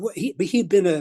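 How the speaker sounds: ordinary talk, nothing marked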